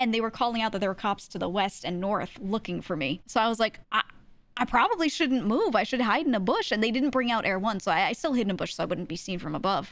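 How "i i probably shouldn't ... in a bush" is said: normal talking voice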